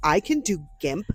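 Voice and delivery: put-on dead serious, most serious tone. Imitating a friend's claim about a craft skill: imitating a very serious tone. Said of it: "She said it in the most serious way".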